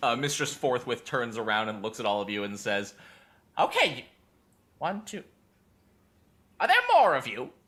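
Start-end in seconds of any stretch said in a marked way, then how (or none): 3.6-7.5 very nasal, high voice pushed through nose. Narrator voicing Mistress Forthwith turning to the group on a bus: very nasally voice. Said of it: "a very nasally voice".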